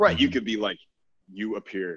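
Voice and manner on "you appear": creepy delivery, quieter. Showing how a compliment sounds said the wrong way: creepy way of saying a compliment. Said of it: "really creepy way if you say it the wrong way".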